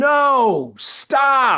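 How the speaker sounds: high-pitched scream with a drawn-out no. Retelling watching a brutal episode at home: imitating screaming at the tv. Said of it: "just screaming at the".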